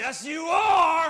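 very loud, screamed unison yell. Retelling how fourteen people answered together, imitating a group yelling. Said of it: "a unison voice of fourteen people yelling, screaming".

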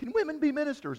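put-on little-kid voice. Retelling a kid's question at Popcorn with the Pastors: imitating a little kid. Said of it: "but I'm acting like a little kid".

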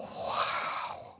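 soft, breathed-out whisper, full of awe.

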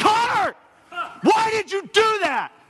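shrill, very high, loud, demanding yell. Retelling yelling at a son after a turnover: imitating own past yell. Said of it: "I stomped my foot and I yelled".

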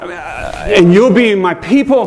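high, slow pleading voice. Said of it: "like, begging".

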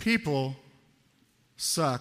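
very slow, low, drawn out word by word. Reaching the third area, people, said really slowly for effect. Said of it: "I'm going to say this really slowly for effect".

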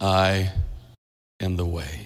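very low, soft, rich baritone. Speaker imagines Jesus speaking in heaven: rich baritone Jesus voice. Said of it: "Jesus will have a rich baritone voice".

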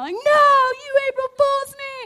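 high, loud, shrill, rising and swooping excited scream. Getting a second-place trophy, the speaker is retelling an excited yell. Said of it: "I'm yelling".

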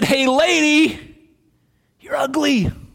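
high, slow, squawky parrot voice. Telling a joke, the speaker voices the parrot talking to a lady: squawky parrot voice. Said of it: "Is that a parrot voice?".

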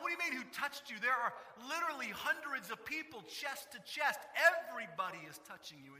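high, incredulous, disbelieving tone.

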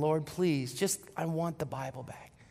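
put-on tearful crying. Retelling her reaction when the Bible was lost, imitating her crying. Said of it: "She's crying".

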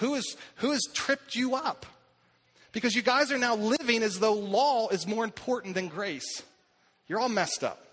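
cutting, sarcastic, biting, mocking scolding. Retelling a letter's rebuke to a church: imitating a sarcastic, biting rebuke. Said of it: "He is sarcastic. He is biting".

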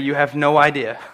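utterly calm, composed, quiet voice. Retelling his answer to guys who came to him: retelling a very calm reply. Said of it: "with a very calm voice and say".

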